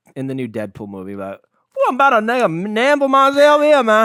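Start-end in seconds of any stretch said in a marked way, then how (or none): 1.8-4.1 very loud, very high, fake Cajun accent. Quoting a chip-eating line in a put-on cajun accent. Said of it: "The Cajun accent, right?".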